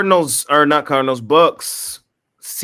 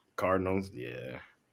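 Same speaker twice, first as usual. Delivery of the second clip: soft, let-down, deflated disappointed tone. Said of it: "She sounds so disappointed".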